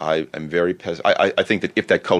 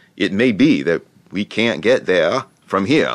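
put-on best-attempt New England accent; 3 semitones higher, 4 dB louder than usual. Closing a podcast interview, the guest gives his best shot at an attempted new england accent. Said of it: "best shot at a New England accent".

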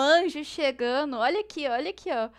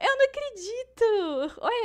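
trembling, high-pitched excited disbelief; 8 semitones higher than usual. A player reacts to her Ashe in the game, trembling with excitement. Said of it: "eu tô até tremendo".

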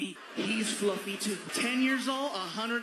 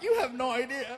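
mock crying, words sobbed out through tears; 3 semitones higher, 3 dB louder than usual. Retelling answering a fast food speaker order, mock crying. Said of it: "I'm crying".

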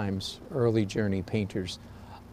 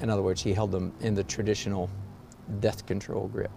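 normal talking voice

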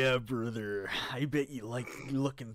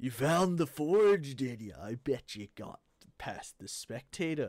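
put-on British accent, fully in character. Role-playing a character who questions the players in the game, in a british accent. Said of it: "Going British".

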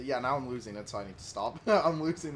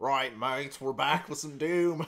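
fake, put-on Australian accent; 3 dB louder than usual. Opening a Doom episode for viewers, in a put-on Australian accent. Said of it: "I am not doing that accent".

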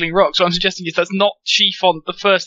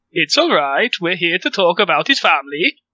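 put-on Swedish accent with up-down lilt. Voicing a character after the others ask for a swedish accent: swedish accent with up-down lilt. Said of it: "a really high, high up and down lilt".

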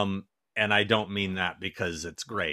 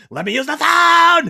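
very loud, very high, shrill, frantic scream; 13 dB louder than usual. Retelling a funny scene she watched, imitating a woman freaking out. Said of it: "She's saying it like that".

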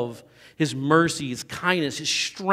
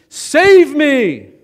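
acted terrified cry, very high and very loud; 11 semitones higher, 11 dB louder than usual. Retelling Peter sinking in the storm, imitating Peter's fearful scream. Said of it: "he screams out as he begins to sink".

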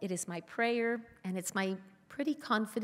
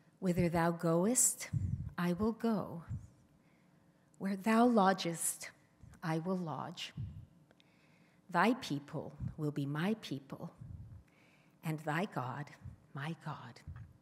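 put-on quiet, hushed voice; 3 semitones lower than usual. Retelling a dinner guest quoting Ruth to Churchill: imitating a hushed voice. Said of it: "apparently in quite a hushed voice".

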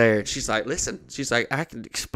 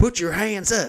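mock shouting, high-pitched yell; 8 semitones higher than usual. Retelling a man yelling at a lady; imitating a yell. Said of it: "he's yelling at this lady".

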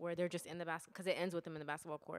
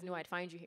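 normal talking voice

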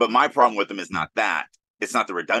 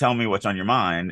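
ordinary delivery

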